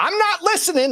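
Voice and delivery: very high yell, acted out. Voicing a character storming out of the room: yelling at the ceiling. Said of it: "he yells that up to the ceiling".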